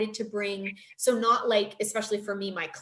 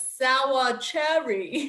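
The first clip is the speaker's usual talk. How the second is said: put-on thick, heavy German accent; 3 semitones higher, 4 dB louder than usual. Retelling a mix-up over a cookie, quoting his answer in a thick german accent. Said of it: "he had this very thick German accent".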